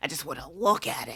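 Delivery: put-on deep, creepy old man. Imitating how a line is said in the movie: Al Pacino creepy old man voice. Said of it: "Al Pacino sounds like just, like, creepy old man".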